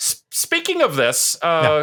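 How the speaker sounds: voice rising very high, squeaky.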